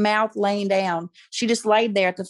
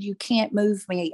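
put-on whisper, slower. Recounting what he whispered when told he'd be moved, retelling a whisper. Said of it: "in a whisper".

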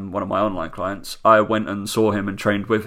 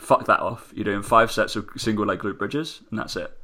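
plain

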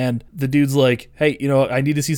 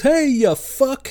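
put-on endearing, affectionate shout, very high; 13 semitones higher than usual. Describing a scene where someone off screen screams at Skippy, retelling an affectionate scream. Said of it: "Somebody off screen screams at Skippy and goes".

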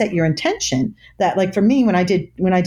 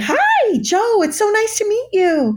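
nervous, anxious sing-song delivery, pitched very high; 14 semitones higher than usual. Showing how a nervous first-date greeting sounds: nervous high-pitched tone. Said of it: "when we're nervous".

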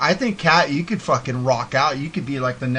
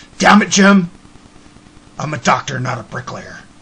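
very loud, fed-up, grumbling complaining outburst; 8 dB louder than usual. Imitating another speaker's complaint as a Star Trek doctor: Bones from Star Trek voice. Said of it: "You sound like Bones from frickin' Star Trek".

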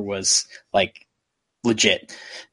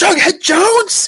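very high, angry, fuming yell; 7 dB louder than usual. Retelling a scene where a character fumes and slams the table: imitating a fuming shout. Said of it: "fumes and twists the newspaper up".

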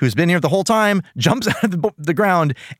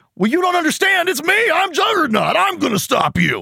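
dim-witted dumb voice, very high pitch; 13 semitones higher than usual. Retelling a cartoon fight scene, imitating Juggernaut sounding like an idiot. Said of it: "It just sounds like he's an idiot that doesn't understand".

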